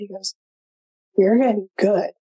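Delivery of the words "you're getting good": put-on concerned, worried tone. Retelling what he said after seeing the move: imitating a concerned tone. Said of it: "there was concern in his voice".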